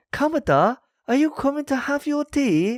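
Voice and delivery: very high, mocking, badly acted Japanese accent. Speaker mocks horrific English voice acting, imitating bad Japanese-English accent. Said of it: "Japanese people who are speaking English, and so the accents".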